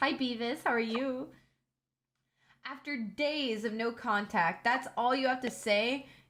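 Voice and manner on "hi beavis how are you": suspicious, guarded, wary tone. Reading a chosen reply aloud in a game chat: acting suspicious. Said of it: "I'm gonna be all, like, sus".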